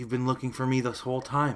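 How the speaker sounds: gentle voice with a smile. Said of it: "a little smile shows up on his face".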